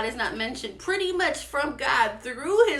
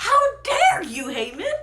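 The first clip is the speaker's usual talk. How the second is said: outraged, furious royal outburst, high and loud; 7 semitones higher, 5 dB louder than usual. Retelling a story, the speaker acts out the king confronting haman, acting out a furious king. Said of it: "is furious".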